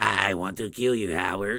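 weird, low, deep character voice. Recalling a movie scene, the speaker quotes the actor in Jeffrey's weird voice.

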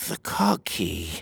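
low muttering under the breath. The king, staring at her in disbelief, mutters. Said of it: "he muttered".

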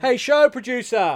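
very high-pitched, loud shout. Calling out to the show producer during the show, yelling. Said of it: "You don't have to yell at me".

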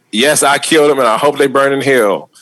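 ordinary delivery

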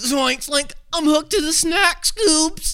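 very high cartoon character voice. Answering the Doctor Phil bit in character: Shaggy voice. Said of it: "so Shaggy's just".

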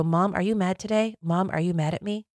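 put-on small, childlike little girl voice. Speaker retells talking to her mom when she looked mad, little girl voice. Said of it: "I would use a little girl voice".

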